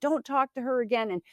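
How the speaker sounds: mild, high-pitched, half-yelled delivery. Retelling how a boyfriend yelled at a boy: imitating someone yelling. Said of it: "started yelling at him".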